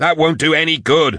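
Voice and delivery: high-pitched shout. One fighter yells at another while being chased up the stairs, yelling. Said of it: "Drusha yelled at her".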